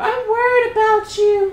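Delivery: put-on elderly old woman voice. Repeating what their mom said to them, in a put-on old woman voice. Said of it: "I don't know why I made her sound like an old woman".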